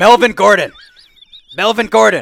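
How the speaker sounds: very loud, high-pitched yell. Speaker retells someone yelling a name at his closed laptop, acting out yelling. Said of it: "He's yelling".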